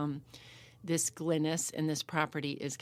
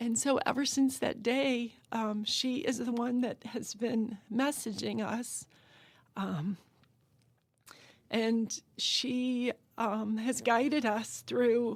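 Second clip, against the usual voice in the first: moved, emotional, pitched-up voice; 7 semitones higher than usual. Speaker telling a personal story, becoming emotional. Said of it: "Excuse me".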